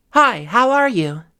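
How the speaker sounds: loud projected voice. Demonstrating voice projection on a practice phrase, projected, louder, more breath. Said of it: "Quite a lot louder, quite a lot more breath being used".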